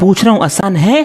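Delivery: loud आसान है with a rising है.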